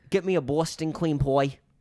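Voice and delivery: rough, amateur attempt at a New York accent. Admitting they have no idea how to do accents, a speaker tries: attempted new york accent. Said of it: "try to do New York accents".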